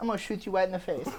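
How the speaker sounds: put-on angry, menacing tone in baby-talk voice. Imagining a cop pulling a gun, still speaking: baby talk. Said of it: "no matter what they're saying, it's baby t-".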